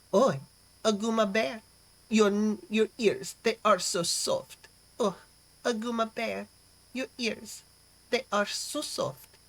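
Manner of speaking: stuck-up, snooty, put-on French accent. Reading a donor's message aloud on request, in a snooty French accent. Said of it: "Try to go for thirty percent more snooty".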